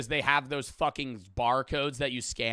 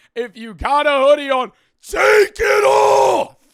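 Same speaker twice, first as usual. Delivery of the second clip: very high, very loud drill-sergeant scream; 13 semitones higher, 16 dB louder than usual. Retelling airport security rules, imitating a screaming guard. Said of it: "He just starts screaming like he's a goddamn drill sergeant".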